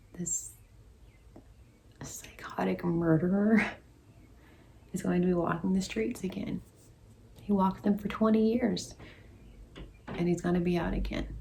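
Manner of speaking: tears just held in check, fighting crying. Giving viewers an update on a case, holding back tears. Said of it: "I'm trying so hard not to cry".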